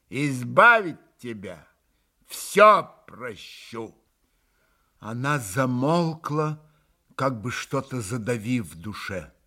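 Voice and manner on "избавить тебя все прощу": disgusted, repulsed, loathing tone. Narrator reading a character's exclamation, spoken with disgust. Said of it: "С каким-то омерзением произнесла Грушенька".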